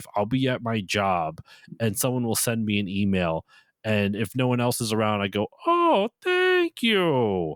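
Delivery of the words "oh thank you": going way up high and sing-song. Speaker showing what they say when someone at work emails them, doing a bad Beetle impression. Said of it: "my bad Beetle impression".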